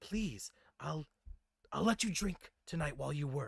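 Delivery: hushed whispering voice. Voicing a character who whispers a plea to stay quiet: whispering. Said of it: "and she whispers".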